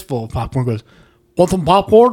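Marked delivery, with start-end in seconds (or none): 1.4-2.1 mock mouth-full speech, pitched higher. Retelling how a date offered popcorn mid-movie: imitating talking with mouth full. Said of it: "turns with a mouthful of popcorn".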